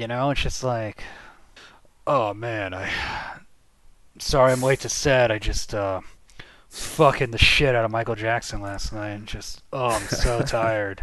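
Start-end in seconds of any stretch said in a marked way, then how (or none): 2.1-11.0 low, deepened masculine voice. Doing an impression of Macaulay Culkin late to set: Macaulay Culkin impression, deeper than usual. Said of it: "your Macaulay Culkin is deeper than your regular voice".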